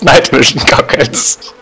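high, slow delivery broken by giggling. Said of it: "Why are you laughing like that?".

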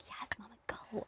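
very quiet, barely audible, embarrassed whisper. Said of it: "whispering to me".

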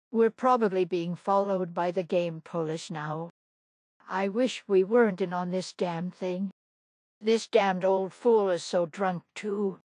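ordinary talk

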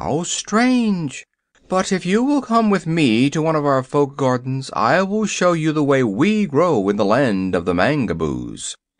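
ordinary delivery

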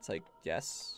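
ordinary delivery

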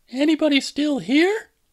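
very high, tentative, hesitant calling out. Narrator voicing her calling for Sandra and Jeff before starting up the stairs; called hesitantly. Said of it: "she called hesitantly".

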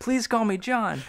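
acted-out scream. Retelling a scene where a man begs the townspeople, acting out a scream. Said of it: "And he's screaming".

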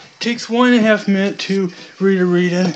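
normal talking voice

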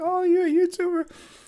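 excited, very high and loud voice. Retelling a woman at a gaming convention hearing he's a YouTuber, imitating her excitement. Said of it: "she got all excited".

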